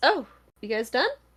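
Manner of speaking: drowsy, worn-out voice. Voicing a sleepy character greeting the players at the door: sleepy character voice. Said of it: "he's kinda sleepy a little bit".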